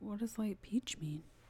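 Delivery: soft, unvoiced whisper.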